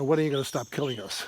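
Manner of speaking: usual speaking voice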